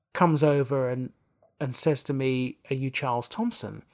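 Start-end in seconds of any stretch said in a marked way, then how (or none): 2.7-3.7 soft, put-on English accent. Retelling a man coming over to ask the speaker's name, english accent. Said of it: "in an English accent".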